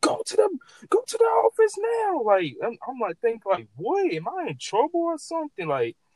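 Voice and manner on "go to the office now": imitated yell, higher, louder, slower. Retelling arriving at school, the speaker imitates the assistant principal yelling. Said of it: "He's yelling".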